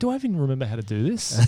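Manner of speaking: usual speaking voice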